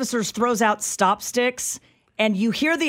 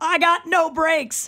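acted yell, higher pitch; 6 semitones higher than usual. Describing a video clip, the speaker acts out the man's reply: retelling a yell. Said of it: "And he yells".

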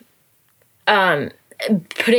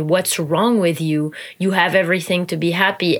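ordinary talk, nothing marked

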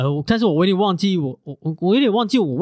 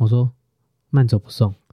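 mock-cold, flat tone, much lower pitch; 6 semitones lower than usual. Recounting how a breakup conversation went, retelling a cold reply. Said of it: "你知道我冷冷讲什么".

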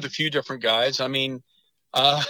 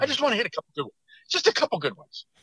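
put-on fast talk, much higher pitched; 8 semitones higher than usual. Retelling what a golfer kept asking for, imitating his fast talking. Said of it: "he'd kind of talk fast".

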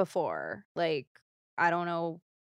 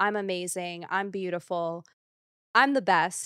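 ordinary delivery

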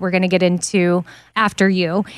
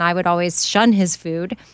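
usual speaking voice

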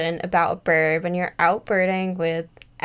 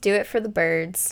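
ordinary talk, nothing marked

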